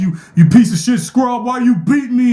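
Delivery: very high, jeering taunt. Imitating a streamer calling people scrubs: Low Tier God impression. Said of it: "my low-tier guy impression".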